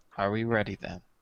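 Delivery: meek, small, little voice. A player speaks as their character, asking the group, in a small voice. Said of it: "all he'll say in a small voice is".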